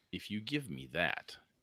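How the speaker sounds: grave, earnest, serious delivery. Narrating a story, voicing a character's demand to the group, in a serious tone. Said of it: "Serious tone".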